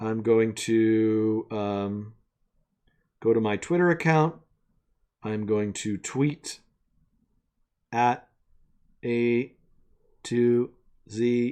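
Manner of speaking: low robotic voice, drawn-out "to". Speaker explains tweeting from their twitter account, in a robot voice. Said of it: "I'm speaking like a robot for no reason".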